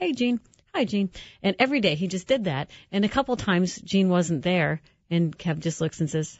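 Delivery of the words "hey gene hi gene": mimicked mutter under breath, higher, slower. Retelling how Kev greeted Gene from his corner chair, retelling muttering under breath. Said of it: "under his breath".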